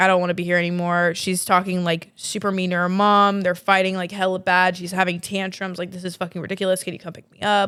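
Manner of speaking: normal talking voice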